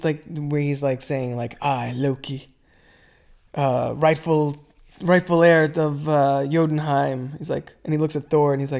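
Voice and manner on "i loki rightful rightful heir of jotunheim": very slow, dead serious, solemn drawn-out delivery. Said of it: "all serious".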